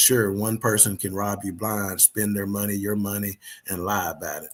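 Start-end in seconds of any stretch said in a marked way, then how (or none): none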